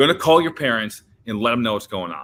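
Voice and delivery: loud, stern authoritative voice. Retelling what a man said when facing suspension, mock-stern warning. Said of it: "like real stern".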